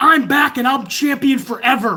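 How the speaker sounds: put-on slow, garbled, distorted yelling through mouthguard. Retelling how he screamed that he was champion forever, imitating someone screaming through a mouthpiece. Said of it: "he's screaming like".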